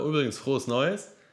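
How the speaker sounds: faintly mocking, slightly sarcastic undertone. Saying happy new year a week late, with a slightly sarcastic undertone. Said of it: "ist es schon so ein leicht sarkastischer Unterton, so".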